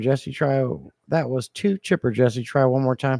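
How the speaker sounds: ordinary delivery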